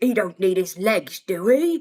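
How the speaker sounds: put-on London-accented orc voice. Explaining that orcs have a british accent, quoting an orc line in a london accent. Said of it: "you would hear that in some parts of London".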